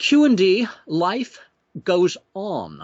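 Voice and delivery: put-on poor, swooping British accent. Reading an event result aloud from a rule table: bad British accent. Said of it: "I'm not very good with a British accent".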